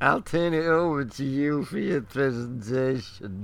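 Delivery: plummy, la-di-da upper-class English put-on accent. Speaker mimics another speaker's line back at him, mocking posh voice. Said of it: "posh sod with plums in his mouth".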